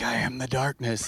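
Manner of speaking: put-on whispering spider voice. Retelling how a spider sat in a shadow: imitating a whispering spider. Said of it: "it's just sitting there whispering".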